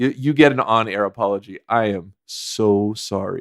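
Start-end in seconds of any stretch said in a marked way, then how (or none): 1.7-3.4 very slow, sarcastic, insincere-sounding tone. Giving an on-air apology to the other speaker, sarcastic-sounding apology. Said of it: "that sounded, like, sarcastic".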